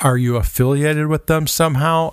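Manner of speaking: ordinary talk, nothing marked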